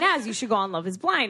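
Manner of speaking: plain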